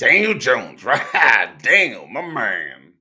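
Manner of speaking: put-on booming, very loud, very slow old-man drawl.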